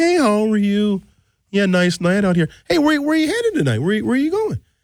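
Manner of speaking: casual, chatty, very nice, light friendly tone. Explaining how police officers ask where you're going, imitating a cop's very nice tone. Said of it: "say it in a very nice tone".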